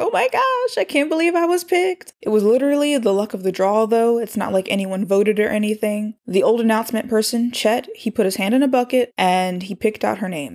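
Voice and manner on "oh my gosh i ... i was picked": play-acted thrilled, ecstatic squeal, very high. Recounting Dodie hearing she was picked for morning announcements, imitating ecstatic screaming. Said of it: "She is screaming".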